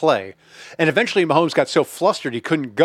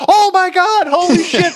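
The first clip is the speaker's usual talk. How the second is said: put-on excited shouting, higher and louder; 7 dB louder than usual. Retelling watching a big sack in the basement: imitating own excited yelling. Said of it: "my kids and my wife could hear me yelling".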